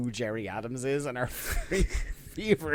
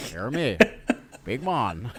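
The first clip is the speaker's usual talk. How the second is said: put-on Northern Irish politician voice, louder; 5 dB louder than usual. Repeating a wrestler's line as a Jerry Adams impression. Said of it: "according to your impression, it's Jerry Adams".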